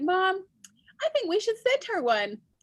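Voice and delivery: put-on high eager kid voice.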